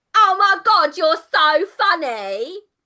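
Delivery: very high, loud laughing in a goblin queen voice. Voicing a goblin queen on an armchair who laughs at a guest: laughing goblin queen. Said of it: "laughs, and she's like".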